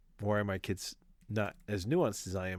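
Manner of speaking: ordinary talk, nothing marked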